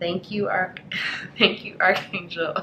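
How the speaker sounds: giggly speech broken by laughter. Speaking thanks to Archangel Orion, laughing while speaking. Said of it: "I don't know why I'm laughing".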